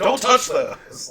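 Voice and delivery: very loud, high-pitched shouted yell. Retelling how mom's friend reacted on the phone: imitating someone yelling. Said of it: "yelling at her on the phone".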